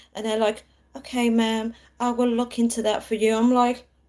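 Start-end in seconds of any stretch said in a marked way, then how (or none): 1.0-3.4 play-acted relaxed, calm, chilled American service-agent voice. Retelling a call to american customer service, imitating calm american agent. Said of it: "how are you so chilled?".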